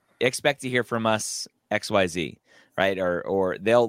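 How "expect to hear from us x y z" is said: ordinary talk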